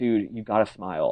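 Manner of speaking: plain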